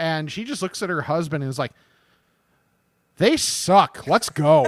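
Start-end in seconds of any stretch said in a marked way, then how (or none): 3.2-4.7 put-on loud, slow, blunt, unfiltered older lady's voice. Retelling an older lady's remark to her husband: imitating someone saying it really loud. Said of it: "And just, like, really loud".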